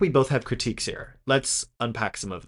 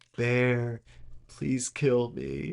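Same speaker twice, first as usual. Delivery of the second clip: slow, mock whimpering, begging tone; 5 dB quieter than usual. Describing a haunting scene, the speaker acts out a character's plea, imitating a whimper. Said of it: "you just get like this whimper".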